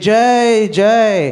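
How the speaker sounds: high, loud, jubilant, glorifying cheer.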